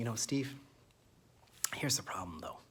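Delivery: embarrassed, hushed voice. Storyteller acts out a man confiding in him, imitating a shy, lowered voice. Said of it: "He says just like this, like he like he's embarrassed about it".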